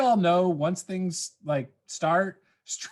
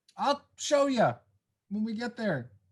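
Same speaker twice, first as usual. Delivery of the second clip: yelling, higher; 4 semitones higher, 3 dB quieter than usual. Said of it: "Why are we yelling this?".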